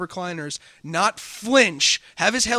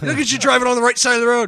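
put-on angry British accent, higher and louder; 5 semitones higher, 6 dB louder than usual. Retelling what British players said while racing: raging Harry Potter voice. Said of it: "A raging Harry Potter".

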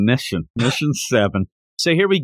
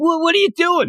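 shrill, very high-pitched yell. Retelling what gets yelled at the other speaker during recordings: imitating own yelling. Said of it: "That's what I'm yelling all the time".

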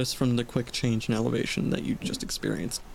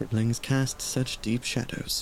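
muttered under the breath. A character makes a dig at a sibling within earshot, under their breath. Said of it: "say under their breath".

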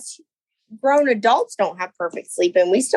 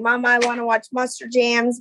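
plain

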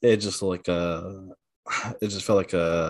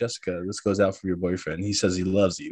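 normal talking voice

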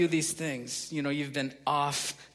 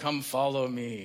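flat, level, one-note monotone; 2 semitones lower than usual. Mocking how Jesus talks in cheesy movies: imitating a monotone movie Jesus. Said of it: "walks and talks like this in a monotone".

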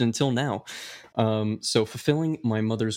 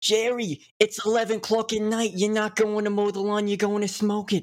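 put-on Brooklyn accent, much higher; 10 semitones higher than usual. Pitching a scene about an old couple, the speaker plays Sharon answering Jerry, Brooklyn accent. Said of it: "why do they have Brooklyn accents?".

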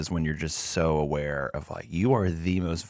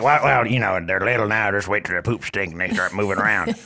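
mock-silly put-on parody voice; 3 semitones higher, 6 dB louder than usual. A parent mocks people who warned about having a child, in a silly mocking voice. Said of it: "That's the type of voice I make fun of them with".

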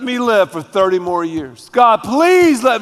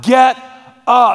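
acted-out loud shout; 3 semitones higher than usual. Acting out the first thing he will shout to believers: retelling a shouted command. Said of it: "The first thing he's gonna shout".

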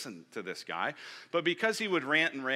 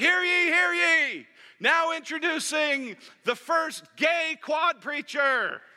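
very high, very loud, very slow, shrill drawn-out yell; 8 dB louder than usual. Storyteller retells a student bursting out of the crowd, imitating a yell. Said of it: "he yells out".

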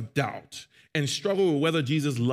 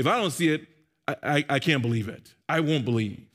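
ordinary delivery

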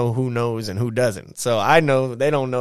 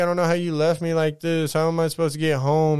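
put-on crying, much higher; 5 semitones higher than usual. Retelling the ex's messages the next day, imitating an ex crying. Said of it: "So she's just crying".

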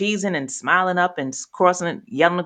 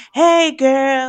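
forced, pitched-up, fake-cheery chipper voice; 8 semitones higher, 6 dB louder than usual. Retelling how Kat answers the phone when asked to sound chipper: imitating Kat's fake chipper greeting. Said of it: "And it sounds so fake".

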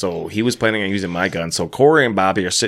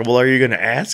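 put-on tearful crying voice, higher; 3 semitones higher than usual. Retelling what the fiancée said during the proposal: imitating someone crying. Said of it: "She's crying and she's just like".

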